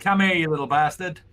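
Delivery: high, hollered shout in character voice. Calling a small companion over in a fight: in-character shout. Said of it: "I shout Blarg. I say".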